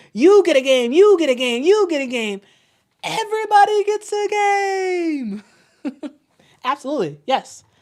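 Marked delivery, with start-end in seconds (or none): 0.2-5.4 put-on, very high announcing voice, "game" drawn out. After a win, speaking in the speaker's own Oprah voice: Oprah voice. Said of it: "in my Oprah voice".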